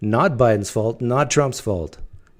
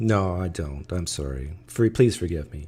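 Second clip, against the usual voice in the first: slow, insincere, sarcastic delivery; 6 semitones lower, 8 dB quieter than usual. Answering a demand for evidence in an argument: sarcastic fake apology. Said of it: "you don't have to respond sarcastically".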